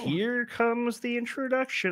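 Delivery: very high, soft little frog puppet voice. Announcing the introduction as a podcast goes live, in a Kermit the Frog voice. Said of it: "That was my Kermit the Frog voice".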